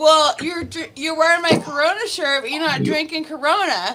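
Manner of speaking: annoyed, worked-up, mad grumble. Retelling a night at the bar, imitating Lynn being mad. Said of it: "Lynn was so mad".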